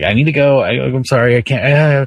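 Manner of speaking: put-on frightened, pleading little kid-like voice. Retelling a scared kid begging to leave the theater: imitating a scared kid. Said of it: "he got super scared".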